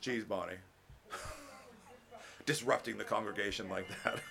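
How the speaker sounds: playful, low, hushed teasing. Pausing the teaching to address bonnie in the congregation, teasing. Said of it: "I'm teasing you".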